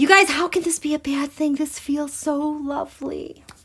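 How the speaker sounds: choked-up, near tears. Speaker reading a chart aloud to the audience, emotional, close to tears. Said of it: "I am going to cry".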